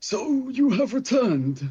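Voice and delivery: very high put-on character voice. Narrator giving the voice heard from the top of the stairs, character voice. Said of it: "that's how his voice is now".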